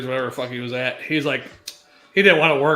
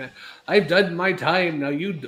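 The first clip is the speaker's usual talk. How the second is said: bad fake accent drifting toward Arabic; 4 semitones higher than usual. Friends trying out accents; speaker attempts an accent that sounds Arabic. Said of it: "that's kind of Arabic".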